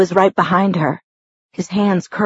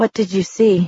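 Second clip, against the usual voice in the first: level, flat, indifferent, uncaring tone. The narrator asks a woman what she saw, flat, uncaring. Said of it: "my flat, uncaring voice".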